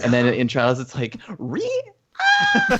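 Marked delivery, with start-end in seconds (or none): 1.4-2.7 very high-pitched, startled, freaked-out shrieking yelp. Retelling a co-host's jump scare in Trials: imitating a scared shriek. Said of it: "Freaking out from the spider".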